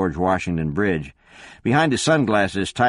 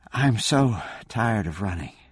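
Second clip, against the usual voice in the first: soft, quiet delivery; 4 dB quieter than usual. As another woman steps toward her, a woman answers: speaking softly. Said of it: "Elizabeth said softly".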